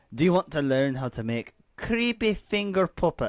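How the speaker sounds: put-on Scottish accent. Reading a book blurb aloud with a co-reader, in a Scottish accent. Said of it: "Take it away, you Scotsman".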